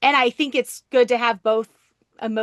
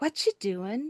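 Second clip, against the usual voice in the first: mock bird whisper, quieter; 3 semitones higher, 8 dB quieter than usual. Retelling a cockatoo whispering from its covered cage in the dark: imitating a whispering cockatoo. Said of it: "I hear this whisper go".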